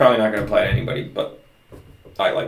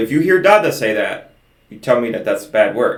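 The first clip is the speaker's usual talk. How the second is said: plain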